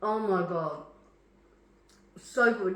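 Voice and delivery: talking with mouth full. Tasting the leftover sauce for video viewers, talking with mouth full. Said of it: "I can't talk with my mouth full".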